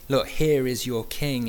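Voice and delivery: ordinary talk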